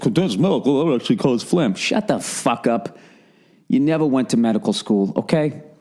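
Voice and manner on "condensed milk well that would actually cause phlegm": pedantic, superior, smug know-it-all tone. Mocking listeners who correct advice: mocking a know-it-all listener. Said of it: "Stop talking like you're a fucking veterinarian".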